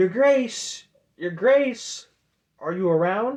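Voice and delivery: high, very loud calling shout. Narrating a scene, the speaker voices River calling for Your Grace, River shouting. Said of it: "River shouting".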